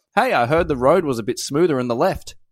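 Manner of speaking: normal talking voice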